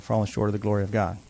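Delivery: plain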